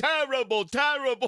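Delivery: put-on New York accent. Repeating the filmed man's words: imitating a New York accent. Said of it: "does a better New York accent than me".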